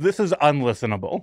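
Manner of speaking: normal talking voice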